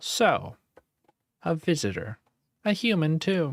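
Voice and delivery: squeaky creature voice. Narrator voicing a creature looking up from her orb at a visitor, squeaky creature voice. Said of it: "the silence is broken by a squeaky voice".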